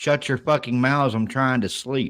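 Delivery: ordinary delivery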